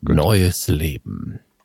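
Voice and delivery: deep movie trailer announcer voice. A podcast host repeats a phrase, prompting a co-host's remark: movie trailer voice. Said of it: "verfallen Sie in Ihre Trailerstimme".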